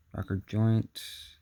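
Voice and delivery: ordinary talk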